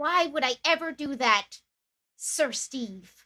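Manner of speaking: grave, earnest, solemn tone. Voicing a kneeling character answering a knight's teasing: solemn. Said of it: "solemnly kneels and be like".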